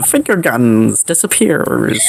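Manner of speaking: usual speaking voice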